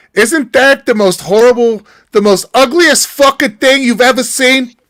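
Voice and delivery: strong Yiddish-inflected voice.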